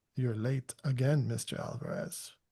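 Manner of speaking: very smooth, silky voice, every word gliding out. Narrating a story, voicing Master Veyra as he speaks to Pablo: smooth Master Veyra voice. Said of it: "we hear this very smooth voice say".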